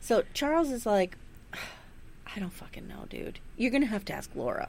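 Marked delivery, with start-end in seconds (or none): 1.5-4.7 put-on clenched-teeth speech, much quieter. Retelling one character's reply to another's request, through clenched teeth. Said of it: "he says it through like clenched teeth".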